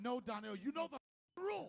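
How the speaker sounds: put-on mad voice. Imitating the other speaker telling him the rules: imitating someone mad. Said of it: "you was mad".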